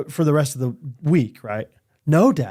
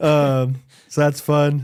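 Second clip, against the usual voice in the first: ordinary talk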